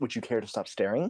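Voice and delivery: sharp, annoyed, snappy delivery. Answering a staring character in a game, snapping at her. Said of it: "I'm gonna kinda snap at her".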